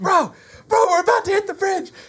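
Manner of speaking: mock, very high-pitched scream. Retelling a boat mishap, screaming back to the one steering the motor. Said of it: "I'm screaming back".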